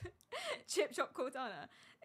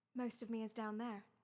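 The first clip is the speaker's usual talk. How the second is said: put-on American accent, lower and quieter; 3 semitones lower, 5 dB quieter than usual. Redoing the game line after getting it wrong: Cortana voice. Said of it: "I said most British".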